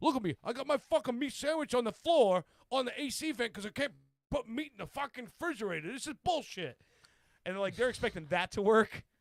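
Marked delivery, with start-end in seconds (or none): 0.0-6.8 put-on New Jersey accent, pitched up. Retelling a guy from Jersey complaining about strict house rules, imitating him. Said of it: "from Jersey, and he's like".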